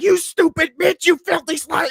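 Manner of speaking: very high, shrill, unhinged doll voice, ranting. Retelling a horror movie scene where the doll snaps: imitating the doll losing it. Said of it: "he just starts losing it in his mind".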